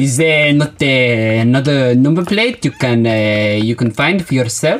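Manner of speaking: put-on French-accented voice. Playing an accent game, asking questions in a French accent. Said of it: "then I'll go French".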